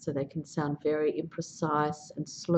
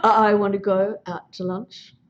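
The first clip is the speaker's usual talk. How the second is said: blocking stutter, higher and louder; 3 semitones higher, 9 dB louder than usual. In a stuttering demonstration, the speaker shows what blocking sounds like: stuttering with blocks. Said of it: "blocking's always really".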